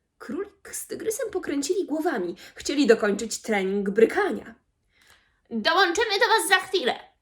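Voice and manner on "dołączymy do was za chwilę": irritated, higher pitch. Interrupted mid-training, the rabbit answers the invitation, irritated. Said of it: "Był poirytowany".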